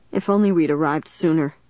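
ordinary delivery, nothing marked

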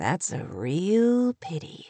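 soft, slow, very stretched-out drawl. [name] responds to her, softly drawled. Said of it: "came [name]'s softly drawled response".

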